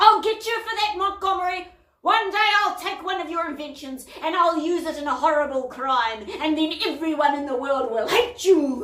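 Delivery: loud, high, full-throated bellow. Narrator reads a man's shout from a police car window, bellowing. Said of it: "he bellowed".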